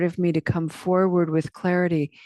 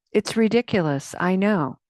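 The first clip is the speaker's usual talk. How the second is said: ordinary talk, nothing marked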